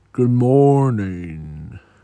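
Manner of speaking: deep voice with the word "morning" stretched out. Narrating a story where a big character greets everyone, in a deep tone. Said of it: "As he says in his deep tone".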